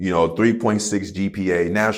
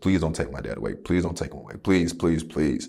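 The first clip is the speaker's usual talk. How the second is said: desperate, pleading tone, lower pitch and quieter; 3 semitones lower, 5 dB quieter than usual. Retelling praying for a father in a coma: imitating own past pleading. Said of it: "just begging God".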